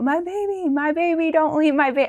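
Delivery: high, desperate, tearful, sobbing wail. Retelling a dad calling out the window: imitating dad screaming and crying. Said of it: "my dad screaming and crying out the window".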